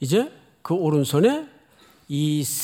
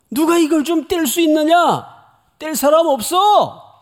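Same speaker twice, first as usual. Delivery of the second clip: high, exasperated, frustrated shout; 11 semitones higher, 7 dB louder than usual. Explaining the verse, the speaker acts out the mighty angel's frustrated shout. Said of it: "이렇게 소리 지르는 거예요".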